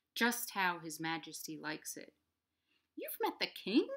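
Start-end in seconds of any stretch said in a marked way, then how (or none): 3.0-3.9 very high, little squeaky voice. A meerkat questions a creature tasting soup, squeaking. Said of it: "Squeaked Meerkat".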